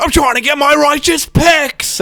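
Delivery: very high, yelling rant, pitched way up. Trying to do him when he goes into yelling mode, a yelling Sam Campbell impression. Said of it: "when he goes into um like sort of the yelling mode".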